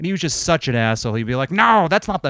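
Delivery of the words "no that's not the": mock abusive, loud, high-pitched yelling. Retelling how a boss yelled at the staff: imitating the boss yelling. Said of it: "yelling at us often".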